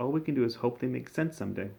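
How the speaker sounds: usual speaking voice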